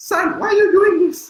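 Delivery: shrill, very high, loud voice. Showing how to voice a mom in a speech: higher-pitched mom voice. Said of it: "I'll give my mom a higher voice".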